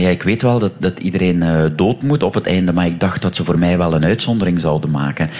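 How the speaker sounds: ordinary talk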